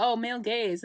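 ordinary talk, nothing marked

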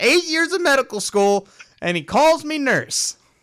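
very high, fuming, angry grumbling complaint. Retelling how Harley Quinn reacts to being called nurse: imitating mad Harley Quinn. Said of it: "She's all mad".

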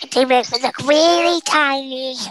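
put-on childlike kid voice. Asked to do his kid voice while joking about elderly poll workers. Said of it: "Do your kid voice".

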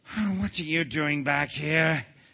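angry, irritable tone. A king, woken from a nap on his throne, confronts a returning visitor, angry. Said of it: "angry at being awakened".

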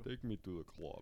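put-on Russian accent. Group all trying out accents together, doing a Russian accent. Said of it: "Let's all try and do a Russian accent".

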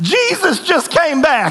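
put-on strong little-girl Southern accent, very high and swooping. Retelling what a little girl said when fireworks went off, thick Southern accent. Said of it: "this little girl goes in this thick Southern accent".

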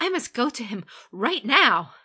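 very loud, high, eager, urgent words tumbling out. Told where he is, she answers before she can stop herself, eager, words tumbling out. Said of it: "her eagerness tumbling between her lips".

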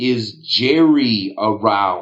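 slow, deliberate, word-by-word, drawn-out delivery. Retelling how Parnas repeated his question at the door: said slower.

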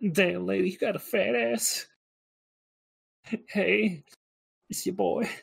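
weird mocking put-on voice, soft and creaky. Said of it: "What the fuck is this voice?".

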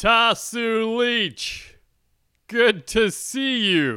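squeaky, very high, weak put-on voice. Trying an impression again for a listener who must guess its source, not-so-great impression. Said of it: "I think maybe my impression is not so great".

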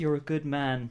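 put-on British accent. Voicing a character in the game who praises another player: British voice as Bran the Broken.

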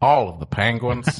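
nature documentary narrator voice. Imagining a penguin documentary narration: Morgan Freeman impression. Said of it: "You can do a pretty good Morgan Freeman".

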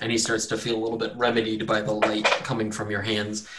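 normal talking voice

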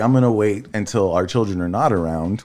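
plain

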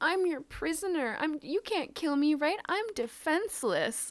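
high, taunting, sarcastic tone. Describing a scene from a book, imitating Visser 3 mockingly surrendering. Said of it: "mockingly surrenders".

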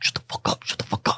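hushed, breathy whisper under the breath. Voicing unseen figures heard whispering to the players: whispering. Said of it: "you can make out specifically some whispering".

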